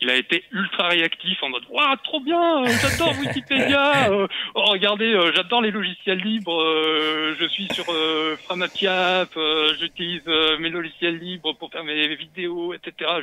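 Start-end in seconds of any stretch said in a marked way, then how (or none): 1.7-12.8 eager, gushing, stop-start speech stumbling on "euh" fillers. Retelling a quick reply in Christophe Michel's voice. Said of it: "[name] imite vraiment très bien Christophe Michel".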